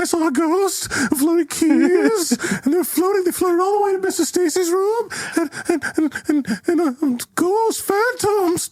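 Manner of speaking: breathless panicked babble, very high, hyperventilating. Retelling how a woman talked to the police: imitating Miranda hyperventilating. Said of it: "She's like she's like hyperventilating".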